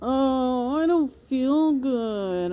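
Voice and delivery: put-on whiny baby voice with drawn-out "oh". Feeling sick while others have stopped caring, whiny baby voice. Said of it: "I gotta use my baby voice and whine".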